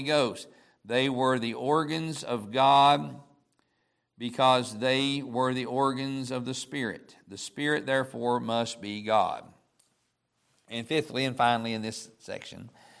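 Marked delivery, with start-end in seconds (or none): none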